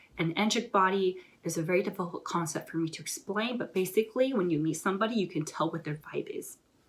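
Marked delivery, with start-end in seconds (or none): 0.2-5.2 very fast, excited rush of words. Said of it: "I just realized I'm talking really fast".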